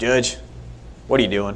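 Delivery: put-on heavy country accent. Retelling his commander calling out to him, imitating a thick country accent. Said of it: "he had a big, thick country accent".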